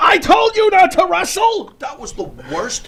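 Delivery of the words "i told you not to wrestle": very high, shrill, furious, scolding shout. Retelling a wrestler's girlfriend yelling at him at an indie show: imitating a girlfriend yelling. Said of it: "his girlfriend's yelling at him".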